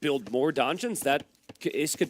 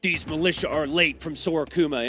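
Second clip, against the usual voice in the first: mock heavily disapproving, very judgmental tone; 2 semitones higher than usual. Imitating build order nerds in the audience: imitating a judgmental tone. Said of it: "in a very judgmental tone".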